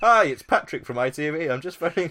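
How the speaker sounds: shrill, booming, very high, loud caller voice. Retelling a phone call heard during a live table read: imitating Patrick from ITV. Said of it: "a guy called Patrick at I T V who'd just phoned up".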